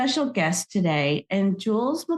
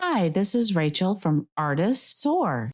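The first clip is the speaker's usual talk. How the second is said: ordinary talk, nothing marked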